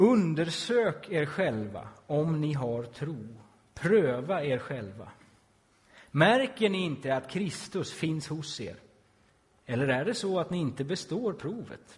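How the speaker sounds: loud, clear read-aloud voice.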